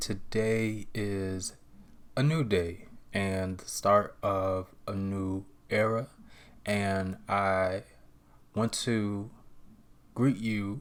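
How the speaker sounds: very slow, chopped-up, halting delivery. Speaker greeting everybody at the start of a new day, very slow, chopped up. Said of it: "I'm speaking very slowly, like very chopped up".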